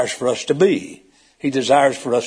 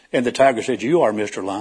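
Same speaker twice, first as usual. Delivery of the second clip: ordinary delivery, nothing marked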